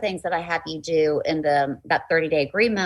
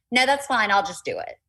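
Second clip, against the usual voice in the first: mean, not nice at all, pitched-up retort; 6 semitones higher than usual. A mother retells answering her son who asked to do it later, retelling saying it mean. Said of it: "and I said it mean".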